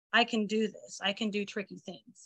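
quiet, low, repetitive mutter under the breath. Retelling what a child says to herself on steep stairs: imitating muttering under her breath. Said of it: "I hear her saying it under her breath".

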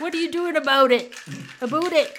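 put-on very loud, high-pitched, atrocious Canadian accent. Mocking atrocious accents, quoting the one canadian among them, imitating a bad canadian accent. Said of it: "one Canadian in there who was like".

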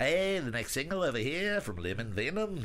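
Liverpool (Scouse) accent. A speaker trying out different accents, doing a liverpool accent. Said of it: "I'm just going to do Liverpool now".

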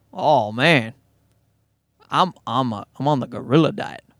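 put-on Southern accent. Playing a bodybuilder talking about his diet, in a put-on southern accent. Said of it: "somehow morphing into Southern".

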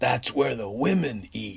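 raspy heavy-smoker voice. Retelling an uncle's reply to a question, in Uncle Bill's Camel non-filter voice. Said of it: "in his camel non-filter voice".

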